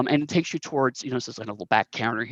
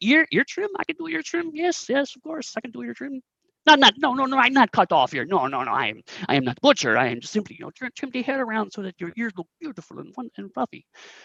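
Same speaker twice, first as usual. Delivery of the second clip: thick put-on Korat accent, very high, swooping pitch; 11 semitones higher than usual. As the groomer character welcoming a rodent customer, thick fake Korat accent. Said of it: "he has a very thick um, Korat accent".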